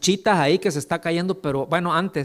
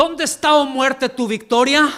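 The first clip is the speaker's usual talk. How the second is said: loud, defiant, heavily emphatic delivery; 9 semitones higher, 5 dB louder than usual. Quoting a scripture line in the tone its writer would use, strong defiant emphasis. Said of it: "Voy a dar el énfasis, ¿ok? Más o menos como sería que lo estuviera diciendo el apóstol Pablo. Es como si lo estuviera diciendo en este tono".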